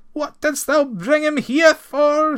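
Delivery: very high, loud, shrill, wailing, terrified moan. Narrator reads the terrified farmer's question to Ranald, moaning in terror. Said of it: "he moaned".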